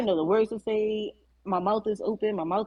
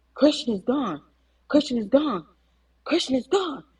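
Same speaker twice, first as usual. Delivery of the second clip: acted panicked cry, repeated over and over; 3 semitones higher than usual. Retelling a phone call where a father screams the news: imitating someone screaming. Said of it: "just screaming in my ear".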